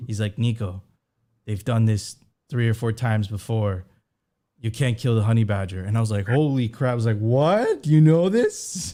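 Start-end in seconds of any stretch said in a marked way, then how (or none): 0.4-5.8 put-on very thick, heavy Chinese accent, laid on. The speaker quotes what a man from a big Chinese city told him: thick Chinese accent. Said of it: "like in his like very thick Chinese accent".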